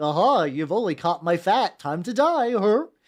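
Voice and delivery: goofy, menacing villain dog character voice. Imagining a fighting dog bitten in the face, doing a voice for the dog. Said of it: "I don't know why I'm doing that voice for the dog".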